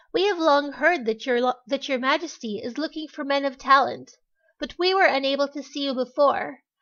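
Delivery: ordinary delivery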